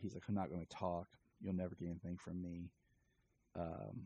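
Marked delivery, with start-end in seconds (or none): none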